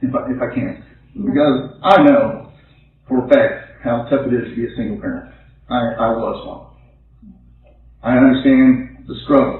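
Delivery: moved, emotional, halting speech, words stopping and repeating. Thanking the people who placed a baby into their care, getting emotional. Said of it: "You get emotional".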